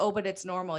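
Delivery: ordinary delivery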